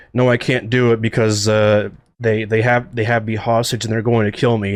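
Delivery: ordinary talk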